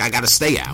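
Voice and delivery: ordinary talk, nothing marked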